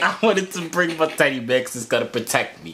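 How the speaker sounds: ordinary talk, nothing marked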